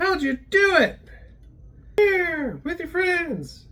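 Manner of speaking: fairy-tale elf character voice. Wrapping up a video, talking like an elf. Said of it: "I don't know why I'm talking like an elf".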